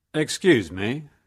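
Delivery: kindly, gentle, mild voice. Reading a story, a young man speaks up and startles someone, in a gentle voice. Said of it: "said a gentle voice".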